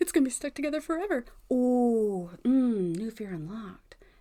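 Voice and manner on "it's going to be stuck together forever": put-on frightened voice, higher. Retelling having crowns molded at the dentist: imitating own fright. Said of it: "that scared the shit out of me".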